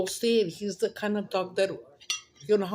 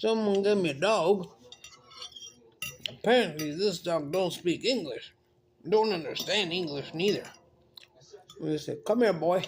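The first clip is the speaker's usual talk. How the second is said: put-on cowboy-style country accent; 2 semitones lower than usual. Quoting a man from a TikTok video, in a country accent. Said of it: "he has a country accent".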